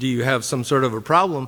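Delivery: plain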